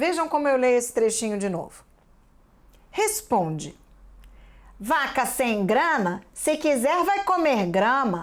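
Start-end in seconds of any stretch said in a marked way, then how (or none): 2.9-6.2 slow read, short pause after "responde". Rereading a passage to show the colon: short pause after 'Responde'. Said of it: "Perceberam que dei uma pequena pausa quando apareceram os dois pontos?".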